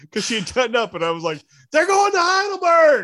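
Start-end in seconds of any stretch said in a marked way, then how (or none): 1.7-3.0 loud shout, very high. Retelling calling out to a wife in another room: retelling own yell. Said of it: "I yelled at my wife".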